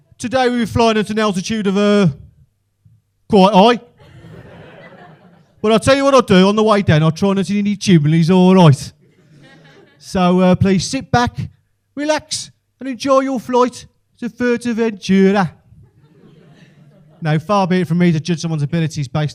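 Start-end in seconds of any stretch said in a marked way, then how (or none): 0.2-15.5 put-on Birmingham accent, higher and louder. Retelling a pilot's announcement on the plane's speaker: imitating a pilot's Brummie accent. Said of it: "the Brummie accent coming out of the mouth of a pilot".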